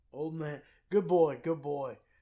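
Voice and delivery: loud, chummy put-on Irish accent. Quoting a man who talked to the listener: imitating an irish accent. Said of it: "talking to you with the the Irish".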